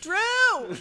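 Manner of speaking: shrill, very loud, high, drawn-out yell. Calling out to someone at the bar in character: yelling a name across a bar. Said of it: "Why are you yelling at stranger?".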